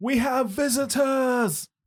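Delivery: very high, loud hollered shout. A game master voices a man who has just noticed the party's armor, hollering. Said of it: "And then immediately hollers".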